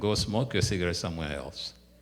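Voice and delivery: ordinary talk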